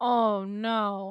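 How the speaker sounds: sounding sarcastic. Reacting to a detail in another speaker's story, sounding sarcastic. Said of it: "That sounded sarcastic".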